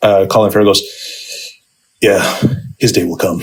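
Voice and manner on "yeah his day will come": low, severe, dead serious delivery. Retelling a line from a film: severe Colin Farrell line delivery.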